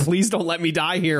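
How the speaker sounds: frantic, desperate, high, rushed pleading scream. Recounting a hard game section with waves of enemies: imitating Kasumi screaming desperately. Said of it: "Kasumi was like screaming, like absolutely desperately".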